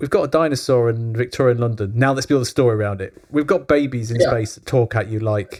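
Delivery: ordinary talk, nothing marked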